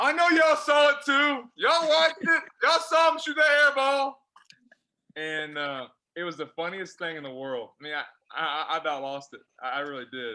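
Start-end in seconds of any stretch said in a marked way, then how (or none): 0.0-4.2 shrill, full-volume, very loud high-pitched hollering. Retelling how a coach yelled at a game: imitating a coach yelling. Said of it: "And he's yelling".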